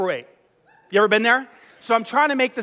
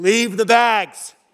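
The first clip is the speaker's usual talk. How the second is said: deep, booming, bellowed shout; 4 dB louder than usual. Retelling shouting out from the front row after a long delay, retelling a bellow. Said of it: "I just let this bellowing".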